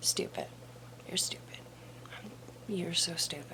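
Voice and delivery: soft, insulting whisper.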